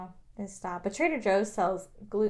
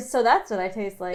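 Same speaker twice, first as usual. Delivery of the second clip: plain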